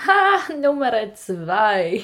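very loud, swooping, laughing out the words. Telling a story, the speaker imitates their sister coming out: imitating laughing speech. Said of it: "richtig lachend so".

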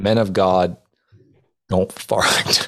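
slow, drawn-out words through laughter. Recalling the dean of men's rebuke, laughing while speaking. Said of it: "i mean i'm laughing but it's just my emotions".

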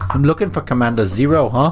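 put-on movie-style South African accent. Acting a character's line in a voiced scene: South African accent. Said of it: "Let's go with South African".

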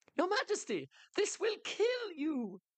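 crying out, pitched very high and swooping. The royal jester calls to the king as the giant raises a boulder, crying out. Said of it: "the royal jester cried out".

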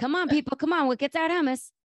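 high desperate urgent voice. Discussing a scene, acting out Ross: imitating Ross, desperate and urgent. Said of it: "Ross's desperation and urgency".

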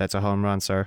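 mock flat, deadpan delivery. Praising a voice actor, the speaker quotes one of the actor's lines, imitating deadpan delivery. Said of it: "just saying the cheesiest stuff in the most deadpan way".

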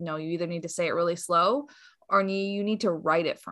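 plain

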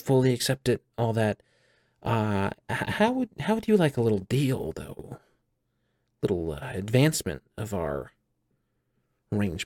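playful, mischievous, impish voice. A warlock patron talks to their warlock, who beat them at cards; mischievous card-loving warlock patron. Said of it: "and I'm a fun guy. You know, I'm a card loving, you know, little mischievous bugger. / It is your warlock patron".

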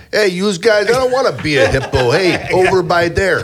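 very high, squeaky put-on gangster accent. Imagining a hippo that could talk, in a gangster accent. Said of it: "in a gangster accent".

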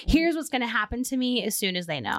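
ordinary talk, nothing marked

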